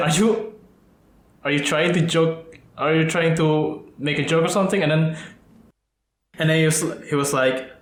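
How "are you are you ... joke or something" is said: ordinary delivery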